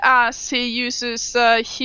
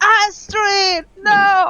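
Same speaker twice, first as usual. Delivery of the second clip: very high, full-lunged, top-of-the-lungs scream; 9 semitones higher, 6 dB louder than usual. Voicing a character who sees his idol shot down: screaming at the top of his lungs. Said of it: "he screams from the top of his lungs".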